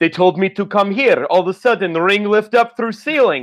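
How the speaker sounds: terrible put-on accent, broken English, sounding baffled and lost. Retelling a boxer's confused entrance into the ring: terrible Drago accent. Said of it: "terrible accent, by the way".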